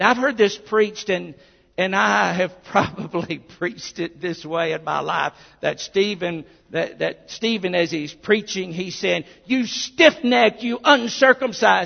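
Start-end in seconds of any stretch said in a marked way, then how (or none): 9.4-11.9 put-on bitter scolding, higher and louder. Preacher acting out a common portrayal of a sermon to the Sanhedrin, mock-bitter scolding voice. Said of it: "with that almost voice of bitterness".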